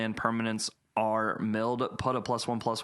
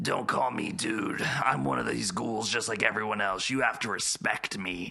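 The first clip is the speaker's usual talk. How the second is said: put-on ghoul-like voice. Retelling what a man who talks like a ghoul says, imitating a ghoul voice. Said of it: "He makes his voice sound like a ghoul's voice".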